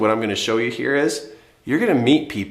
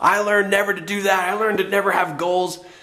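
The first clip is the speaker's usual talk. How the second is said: heated, sarcastic tone, pitched up; 7 semitones higher than usual. Showing sarcastic statements thrown around after a disappointment: heated sarcasm, put on. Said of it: "sarcastic kind of heat".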